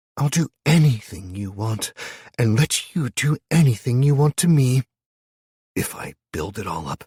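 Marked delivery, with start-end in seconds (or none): 0.2-4.8 sweet honeyed silky voice, pitched up. Narrating a story, she promises Matt in a voice like honeyed silk. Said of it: "she promised in a voice like honeyed silk".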